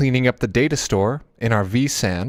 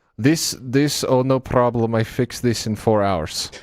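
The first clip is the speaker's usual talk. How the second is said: put-on thick, heavy European accent. Quoting a hired guy from Russia checking the data store: thick Euro accent. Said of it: "with his thick Euro accent goes".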